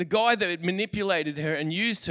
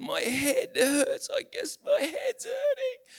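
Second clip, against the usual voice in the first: put-on crying small child's voice, in pain; 10 semitones higher than usual. A father retells what his crying son told him outside: imitating a child in pain. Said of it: "he was in like incredible pain".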